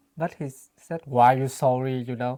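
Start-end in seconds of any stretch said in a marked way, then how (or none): 1.0-1.9 raised, snippy voice with attitude. Retelling how a partner answered an apology: imitating a reply with attitude. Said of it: "with that attitude".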